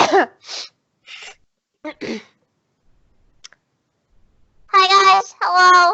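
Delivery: loud, put-on gnome character voice. Asked what their gnome voice sounds like, warming it up: gnome voice. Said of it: "What is your gnome voice?".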